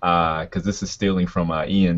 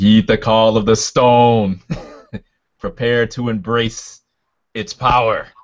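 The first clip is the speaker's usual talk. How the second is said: loud, resounding, echoing, booming voice from on high; 4 semitones higher, 5 dB louder than usual. Game master voicing a hovering figure addressing a player, in an echoing, booming voice. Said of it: "in a uh, echoing, booming voice, I say".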